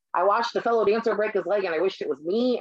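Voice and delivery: ordinary talk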